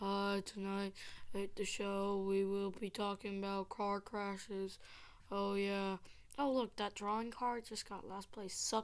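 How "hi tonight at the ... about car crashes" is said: dull, flat, boring TV newsreader monotone. A speaker playing a game shows the boring voices from TV, boring TV announcer voice. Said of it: "sound like those boring voices from TV".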